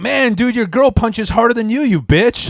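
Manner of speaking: cocky, taunting trash talk, high and loud. Retelling own words while being beaten up: retelling own trash talk. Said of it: "just talking shit while they're beating me up".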